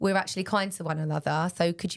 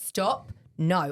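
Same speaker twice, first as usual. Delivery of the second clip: put-on raised voice. A parent retells scolding her toddler Daisy; retelling a raised voice. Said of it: "I'd raise my voice".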